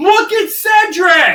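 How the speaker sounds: very loud, very high, shrill screamed call. Describing not telling contestants apart in a challenge: imitating Jeff screaming. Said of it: "unless Jeff is screaming".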